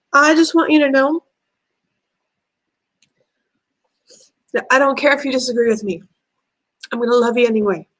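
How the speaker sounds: weeping, tearful voice. Speaker addressing people who disagree with them, crying. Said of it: "I'm crying already".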